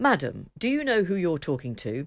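haughty, prim, indignant, most correct posh voice. Retelling a sister's reply on the phone: imitating a most proper, indignant voice. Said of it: "She mustered her most proper voice to say, rather indignantly".

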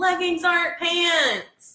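play-acted very high shriek, "pants" drawn out. Speaker retells a dude who screamed at them during stand-up, retelling a scream. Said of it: "this dude like screamed at me".

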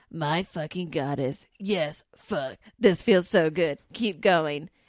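loud obnoxious voice. Reading a story aloud, the narrator voices the character Raccoon: Raccoon dickhead voice. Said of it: "I can't help but give him a dickhead voice".

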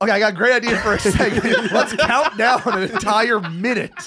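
teasing mocking voice, high-pitched and loud. Mocking a co-host's countdown idea: imitating Figs. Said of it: "here's my impression of Figs".

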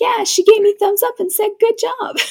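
put-on very high, rushed, eager gushing little-kid voice. Retelling a mic'd-up kid skating over to his dad: imitating an excited kid. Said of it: "He's so excited".

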